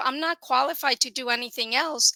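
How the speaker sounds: ordinary talk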